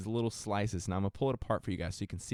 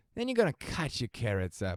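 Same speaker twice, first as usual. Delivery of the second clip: put-on sing-song Irish accent; 3 semitones higher than usual. While cooking, the speaker says to cut the carrots in a put-on Irish accent. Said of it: "I don't know why I'm doing an Irish accent".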